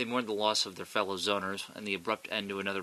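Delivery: ordinary delivery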